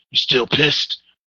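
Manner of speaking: fake hoarse, mumbled, tough superhero rasp. Mocking an actor's line to his co-star in a movie, fake-laryngitis badass superhero voice. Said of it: "That fake ass laryngitis. I'm a badass superhero voice".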